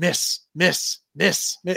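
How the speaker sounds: put-on whisper under the breath. Retelling a story of a player at the free throw line: imitating Steven Adams whispering under his breath. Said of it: "whispering under his breath".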